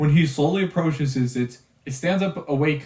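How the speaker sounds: plain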